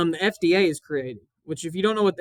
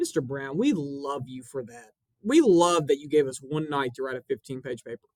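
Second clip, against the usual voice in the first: low, sarcastic tone dressed as sincere; 4 semitones lower than usual. A teacher voices imagined students speaking to their teacher; mock-sincere sarcastic praise. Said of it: "I would be shocked if that was sincere".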